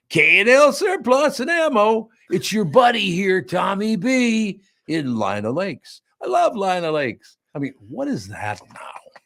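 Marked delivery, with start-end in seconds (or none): 0.1-7.3 swooping radio disc jockey voice. Reading a store's ad copy, the speaker mocks commercials read in a radio disc jockey voice. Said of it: "read this like a radio disc jockey does it".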